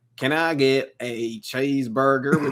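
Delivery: put-on, slow, drawn-out southern drawl. Retelling the other speaker ordering at a drive-through: imitating a southern accent. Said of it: "mimicking, like, southern accents".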